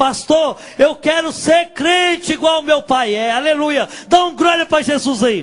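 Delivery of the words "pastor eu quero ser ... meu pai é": mock crying, loud, tearful shouting. Retelling crying out to the pastor before the pulpit: retelling a loud shout. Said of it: "gritei em voz alta".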